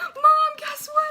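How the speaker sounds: loud, high-pitched, gushing excitement.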